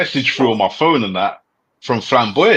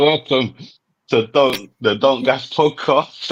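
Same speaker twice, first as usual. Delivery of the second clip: slow, laughing through the words while cracking up. Opening the podcast after laughing too much: laughing while talking. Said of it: "I can't even talk, man. I was laughing too much".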